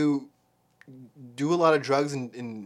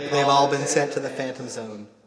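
normal talking voice

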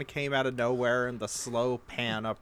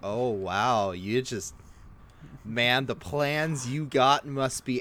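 mock sarcastic tone. Retelling a character's line about someone's plans: imitating a sarcastic character. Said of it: "very sarcastic of".

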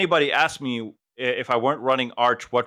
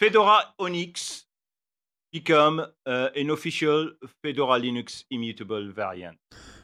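English with a put-on French accent; 3 semitones higher than usual. Presenting his link in the news roundup, in a fake French accent. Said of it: "switched from French to just a French accent".

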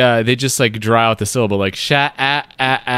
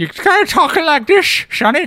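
put-on old-timey prospector voice, much higher. Describing how someone talks, demonstrating an old-timey prospector voice. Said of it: "the dial labeled old timey prospector and crank that up".

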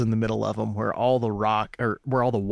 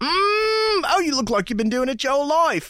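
put-on British accent, higher; 4 dB louder than usual. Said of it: "he's this British guy".

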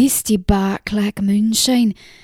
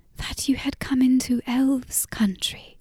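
hushed, awed whisper full of reverence; 2 semitones higher, 7 dB quieter than usual. A little girl in the story speaks up: whispered with reverence. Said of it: "the little girl whispered".

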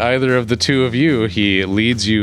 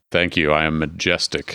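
put-on deep cat voice, much lower; 6 semitones lower, 4 dB quieter than usual. Speaker voices a small cat thanking someone for a compliment: deep cat voice. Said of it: "you got a deep voice for such a small cat".

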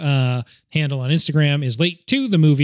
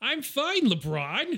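put-on cartoon rabbit voice, higher and quieter; 10 semitones higher, 10 dB quieter than usual. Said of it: "That's my best Bugs Bunny".

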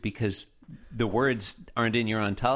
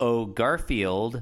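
ordinary delivery

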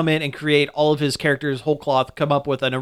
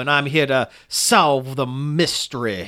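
over-the-top, slow Louisiana bayou Southern drawl. Describing a film detective, doing an exaggerated Daniel Craig Southern drawl. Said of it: "an exaggerated impression of Daniel Craig".

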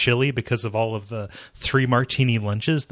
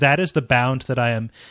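usual speaking voice

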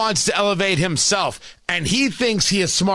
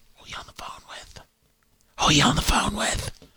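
soft, hushed whisper, barely voiced; 5 dB quieter than usual. Retelling walking in while his wife is on the phone: imitating own whisper. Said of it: "I usually whisper".

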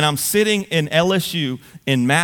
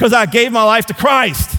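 loud, pitched-up, mock awkward blurt; 7 semitones higher, 6 dB louder than usual. Retelling blurting an answer to a classmate in class: retelling a loud awkward declaration. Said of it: "as loudly and as awkwardly in the middle of class as I possibly could".

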